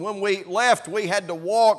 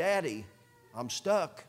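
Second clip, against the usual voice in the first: put-on pleading child voice, much quieter; 3 semitones lower, 10 dB quieter than usual. A father recalling his stuck child calling out to him, retelling a child's plea. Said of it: "It was a plea".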